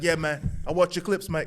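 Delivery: put-on, mimicked London accent. Retelling meeting a cop who watches his clips, imitating a london accent. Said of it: "he got the London accent".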